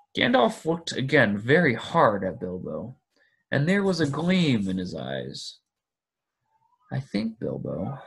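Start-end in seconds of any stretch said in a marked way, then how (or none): 7.0-8.0 quiet, softly spoken words. Reading one man speaking to another who has just hesitated, quietly. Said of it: "he said quietly".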